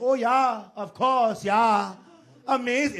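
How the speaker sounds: loud, drawn-out, clumsy put-on Scandinavian accent. Showing how Americans do Scandinavian accents: bad American Scandinavian accent. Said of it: "I don't think Americans are even good at accents".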